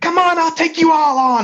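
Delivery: shrill, very high-pitched battle-cry shout. A tabletop player voices Easter attacking an enemy, Easter shouting in character. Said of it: "is like shouting".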